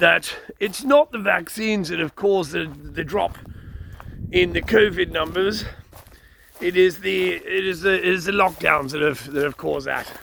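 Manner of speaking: fake upper-class Eton accent. Quoting the Prime Minister's statement: Boris Johnson's Eton accent. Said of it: "in his typical Eton accent".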